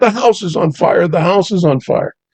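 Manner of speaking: high, loud, alarmed yell.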